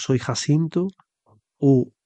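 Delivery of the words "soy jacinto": ordinary delivery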